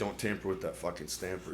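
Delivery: mock nasty, nagging tone, mean and quiet. Recalling a deaf man people talked about, the speaker imitates Mister Eddie being mean. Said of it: "But he'd be mean".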